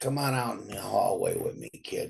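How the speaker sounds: put-on gravelly old man voice. Quoting a sixty-year-old guy speaking to him, in a gravelly old-man voice. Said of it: "gravelly voice".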